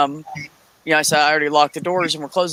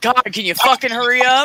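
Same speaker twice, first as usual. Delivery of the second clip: rude raised-pitch delivery; 8 semitones higher, 4 dB louder than usual. Retelling an argument with a customer, imitating a rude demand to hurry. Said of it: "you made it sound like I said".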